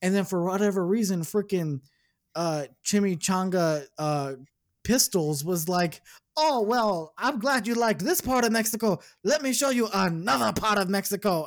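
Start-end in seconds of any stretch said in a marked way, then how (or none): 6.4-11.5 put-on pitched-up voice with slight German accent. Retelling how the character Pistoles kept showing more of Mexico: imitating Pistoles. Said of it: "That almost sounded like a German accent there".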